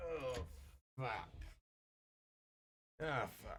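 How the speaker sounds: put-on very slow, sloppy drunken voice. Voicing a drunk guard crawling out of a cart: drunk guard swearing. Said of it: "and he's like".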